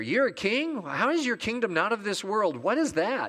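sincere, earnest, genuinely curious tone. Reading Pilate's question to Jesus as very sincere, sincere question. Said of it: "You can read it as though he's very sincere".

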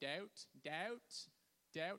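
best-effort British accent. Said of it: "say it in your best British accent".

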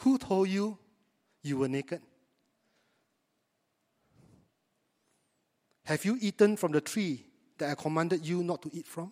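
gentle, loving, tender tone. Reading Bible verse 11 aloud, quoting God in a loving tone. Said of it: "This is in a loving tone".

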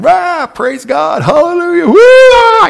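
full-throated screaming, very loud and very high. Retelling coming up out of the baptism water: imitating own past screaming. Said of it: "at the top of my lungs, just screaming".

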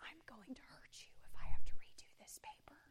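hushed whisper, under the breath. Retelling what a friend whispered from behind: imitating a whisper. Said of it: "he whispers".

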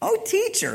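put-on very high, loud, smart-mouthed sarcastic tone. Acting out a law expert testing Jesus: imitating a sarcastic questioner. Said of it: "Can you picture the sarcasm here?".

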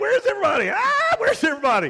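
acted-out screaming. Retelling how he looked up, saw nobody and started screaming; retelling a scream. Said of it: "He was screaming".

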